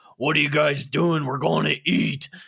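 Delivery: growling voice. Retelling a night of drinking, quoting John: imitating John's growling voice. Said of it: "growling at us when he was talking".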